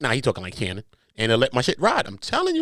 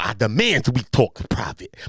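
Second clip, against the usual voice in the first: lower-pitched put-on lisping voice; 5 semitones lower than usual. Reading out the lawsuit's claims, quoting Shannon Sharpe: Shannon Sharpe voice with a lisp. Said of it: "anytime I talk like Shannon, I make sure I go into the lisp".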